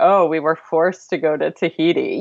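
put-on dry, ironic, tongue-in-cheek sarcastic delivery. Explaining a clip in the video, quote John Musker's remark: mock-sarcastic John Musker quote.

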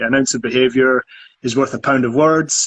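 ordinary talk, nothing marked

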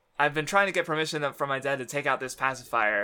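ordinary talk

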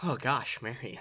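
little schoolboy voice. Retelling a movie moment when marion walks out: little schoolboy voice. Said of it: "turns into, like, a little schoolboy and he's just like".

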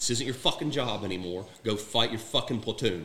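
blunt, direct, clear delivery. Retelling what another soldier told him during a battle, quoted direct and clear. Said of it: "And it was direct".

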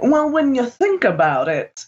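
cheap true crime documentary narrator voice. Mocking how true crime documentaries narrate, true crime documentary voice. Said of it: "like it's a true crime documentary".

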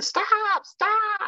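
very high, irritating mock yell, squealed way up. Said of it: "she would be the one yelling".

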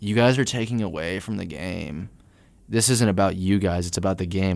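ordinary delivery

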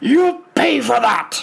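warped, distended, rough, furious voice from below. A game narrator voices the angry revenant calling up from the canyon bottom: distended angry voice. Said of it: "You hear a distended voice from the bottom".

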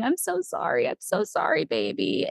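slow, acted, tearful crying whisper. Retelling apologizing to her newborn baby while being stitched, re-enacting crying. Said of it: "I'm just like crying saying".

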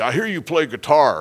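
mock big booming voice. Retelling what an employee said to the speaker while driving, imitating a big booming voice. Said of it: "He's got this big booming voice".

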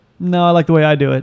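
ordinary talk

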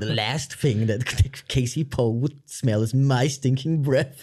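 slow, theatrical, declaiming stage-actor delivery. Retelling a film villain's line: John Malkovich thespian voice. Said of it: "talking like a thespian".

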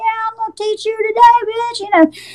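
play-acted shrill, very high, jeering yell. Retelling inmates calling out to new arrivals: imitating inmates yelling. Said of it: "they yelled like that".

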